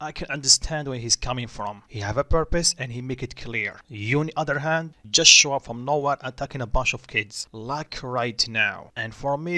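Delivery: ordinary delivery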